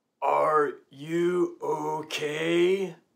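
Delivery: very slow, deliberately drawn-out, spelled-out, rising pitch. Retelling one of five men who ran up to him, speaking very slowly. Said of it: "says to me very slowly".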